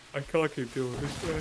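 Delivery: beaten, dejected, soft, defeated, all fight gone. Talking to a teammate about the house you were building, sounding defeated. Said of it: "You actually sound so defeated".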